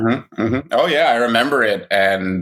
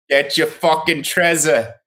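Trenton longshoreman accent; 6 semitones higher than usual. Put on your best accent after joking about someone's Northeast talk: a Trenton longshoreman accent.

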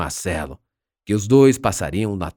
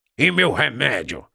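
grousing, grumbling, complaining tone; 4 semitones higher than usual. Molusco calls out as others leave, before the girl restrains him, grumbling. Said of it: "Molusco resmungou".

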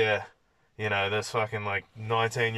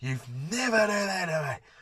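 yelling, much higher pitch; 8 semitones higher than usual. Recounting yelling back at someone who had pushed the speaker, retelling a yell. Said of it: "I just yell at him".

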